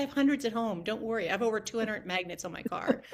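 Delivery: plain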